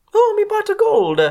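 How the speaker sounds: very high-pitched, loud cartoon Italian voice. Playing a leprechaun who lost his pot of gold, in a Mario voice. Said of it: "that was fucking Mario".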